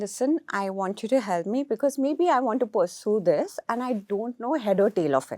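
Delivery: plain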